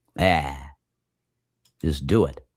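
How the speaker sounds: put-on grandfather voice. Acting out a made-up exchange with a grandfather: imitating Grandpa Davis. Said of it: "That's what my Grandpa Davis would say".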